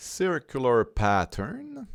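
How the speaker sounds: put-on proud, slow, high-pitched English accent.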